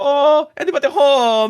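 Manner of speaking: goofy put-on dumb voice, very high and loud. Retelling calling into a creepy house in a game: put-on stupid voice. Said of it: "I'm doing the stupid voice".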